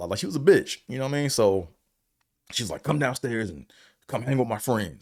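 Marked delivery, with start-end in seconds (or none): 2.8-5.0 mock demanding, bossy, commanding tone. Retelling how a woman ordered him downstairs: imitating a bossy woman. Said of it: "she was just real bossy".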